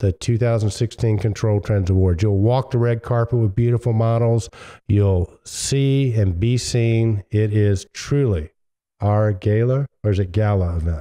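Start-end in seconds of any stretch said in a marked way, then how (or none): none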